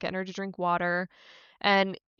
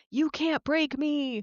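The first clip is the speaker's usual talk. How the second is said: put-on, slow, pitched-up, taunting, triumphant, defiant yell; 7 semitones higher than usual. Retelling a character yelling into the woods: imitating Boyd yelling defiantly. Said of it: "starts yelling into the woods, like".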